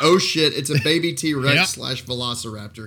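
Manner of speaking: normal talking voice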